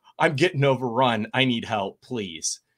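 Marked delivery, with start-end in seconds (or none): none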